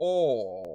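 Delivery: British oh like a double-chinned aristocrat. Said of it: "going for the double chin look".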